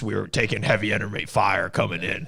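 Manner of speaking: intense, tough, hard-edged audiobook narrator voice. Imitating an author who talks like this in his audiobook: imitating an intense audiobook author. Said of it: "I love the audiobook 'cause he talks like this".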